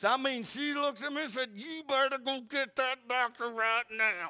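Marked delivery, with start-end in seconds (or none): 1.5-4.3 words forced out through gritted teeth. Retelling what she said to him before giving birth, through gritted teeth. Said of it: "Through gritted teeth".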